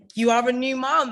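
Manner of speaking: cheerful shout. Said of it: "said my best friend".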